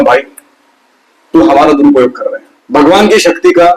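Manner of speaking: normal talking voice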